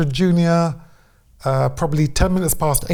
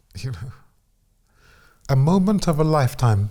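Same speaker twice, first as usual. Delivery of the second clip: emotional, tearful, welling-up voice close to tears; 2 semitones lower than usual. Interviewee asked about watching the moment back, welling up. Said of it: "I'm I'm welling up now".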